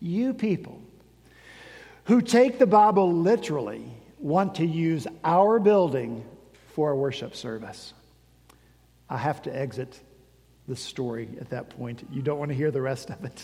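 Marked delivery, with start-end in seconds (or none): 0.0-7.9 talking-down, condescending voice, oozing condescension. Retelling a pastor's reply to a request to use a building: imitating a condescending pastor. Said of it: "with a voice oozing with condescension".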